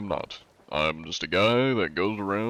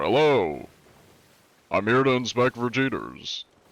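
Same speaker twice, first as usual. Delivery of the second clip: posh, fancy announcer-style delivery; 2 semitones higher than usual. Showing how the John role-play voice sounds: announcer-like fancy voice. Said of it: "announcer-esque, fancier-esque".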